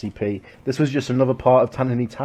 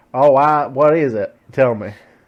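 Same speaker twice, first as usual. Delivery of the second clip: loud, hammed-up put-on cowboy voice; 5 dB louder than usual. On a podcast, a co-host asks what else today is, in a cowboy voice. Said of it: "I'm gonna stop doing the cowboy voice".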